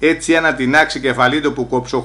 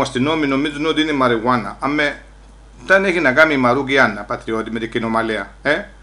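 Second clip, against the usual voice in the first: usual speaking voice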